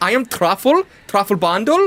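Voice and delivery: put-on gnome voice with German accent. A narrator voices a gnome greeting the adventurers, german gnome voice. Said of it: "German gnome".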